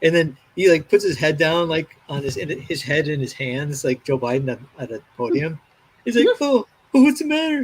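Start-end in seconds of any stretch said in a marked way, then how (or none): 6.4-7.7 very high-pitched, mocking, jeering tone. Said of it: "[name] is, like, ridiculing somebody".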